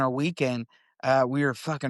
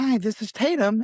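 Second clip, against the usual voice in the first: polite, pitched-up customer-service voice; 8 semitones higher than usual. Retelling how she answered a work phone call, Tatum's customer service voice. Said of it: "your customer service voice".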